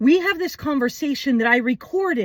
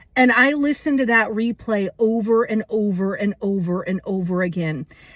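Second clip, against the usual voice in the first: ordinary talk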